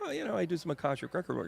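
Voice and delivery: fast, high, mock breezy, offhand delivery.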